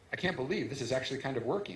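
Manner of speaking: ordinary talk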